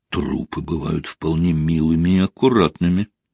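low, mumbled, half-swallowed words. A man answers a woman who just called him worse than a corpse; muttered. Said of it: "пробормотал он".

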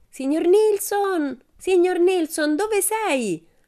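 very high, drawn-out shrieking call. A girl calls out, searching for someone, shrieking in a high voice. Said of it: "strillò un attimo dopo con voce acuta".

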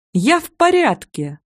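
perky, upbeat, bright, high, cheerful. After falling off the bed, the narrator answers a man calling her, cheerfully shouting. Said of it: "бодро выкрикнула я".

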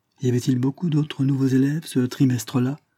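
timid voice. Linford puts a question to the older speaker, timidly. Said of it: "Demanda timidement Linford".

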